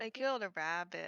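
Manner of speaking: all happy, cheery and upbeat. In a role-play scene, replying to another character, happily. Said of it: "I say all happily and shit".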